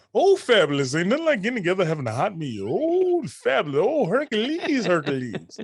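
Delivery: high-pitched comic character voice, swinging up and down. Performing on request a best impression: Eddie Murphy impression. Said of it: "have you do your best Eddie Murphy impression".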